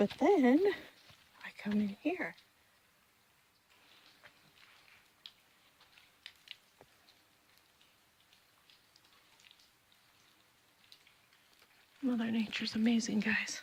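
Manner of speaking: hushed whisper. Recording alone, addressing viewers as guys, whispering. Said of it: "I don't know why I whisper all the time when I'm recording".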